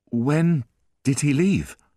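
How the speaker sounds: feeble, faint, weak high voice. Reading aloud a character, almost fainting, asking the concierge a question: weak voice. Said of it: "he asked in a weak voice".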